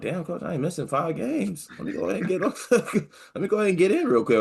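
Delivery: very high, muttered stage half-whisper. Imagining a player walking past the coach: imitating Bencher half-whispering under his breath. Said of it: "whispering under his breath as he walks by".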